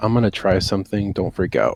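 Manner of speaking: low, under-the-breath muttering murmur. Voicing a character who quietly warns a cellmate: muttering quietly. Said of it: "I basically just kinda mutter".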